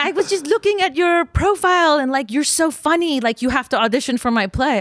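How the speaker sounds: put-on French accent. Quoting a message from a woman casting her play, imitating a French accent. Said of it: "She D M'd me in her French accent".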